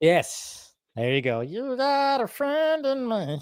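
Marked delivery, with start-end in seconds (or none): 1.4-3.4 very high, slow, stretched, swooping delivery. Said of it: "that's my [name]".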